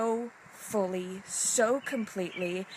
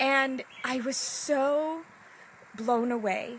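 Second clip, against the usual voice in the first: high, slow, choked-up emotional speech. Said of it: "I might get a little emotional".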